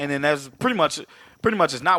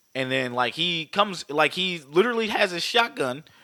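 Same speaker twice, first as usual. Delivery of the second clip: usual speaking voice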